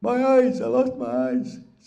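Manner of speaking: crying voice. Telling a folk story, voicing Wisakichak who lost his eyes: character crying. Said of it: "quit crying".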